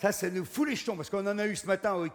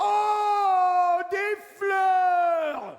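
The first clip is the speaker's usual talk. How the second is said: acted scream, higher and louder; 10 semitones higher, 6 dB louder than usual. Retelling how the hostess reacts on seeing the flowers: imitating a hostess screaming. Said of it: "elle se met à hurler à la mort".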